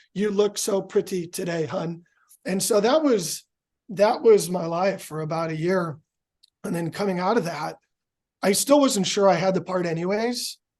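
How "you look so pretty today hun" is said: machine-like text-to-speech voice, even and mechanical. Unable to talk for weeks, the speaker imitates his texts spoken to his wife: robotic voice. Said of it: "it would spit out in a robotic voice like".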